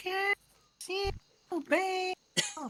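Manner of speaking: put-on shrieking like a little kid. Recounting a cartoon version of a character, voiced like a child screaming, super high-pitched. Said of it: "made his voice super high pitched, so it's like a child screaming".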